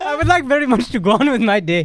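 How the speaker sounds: drifting into Indian accent. Keeping up a put-on voice that a listener says is going indian; indian accent. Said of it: "You're going into India now".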